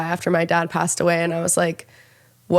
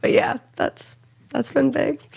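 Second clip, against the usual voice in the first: crying through words, voice cracking, pitched up; 8 semitones higher than usual. Recalling the mom saying the dad would be proud: crying while talking. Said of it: "Sorry, I don't know why I'm crying".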